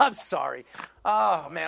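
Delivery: laughing with snorts. Apologizing to the group while laughing: laughing with snorts. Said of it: "I'm snorting now".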